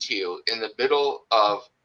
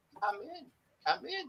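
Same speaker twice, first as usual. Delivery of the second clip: tiny voice, very high and very soft; 15 dB quieter than usual. Game master voicing an unseen caller inviting the choking players in, in a small voice. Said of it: "you hear a small voice going".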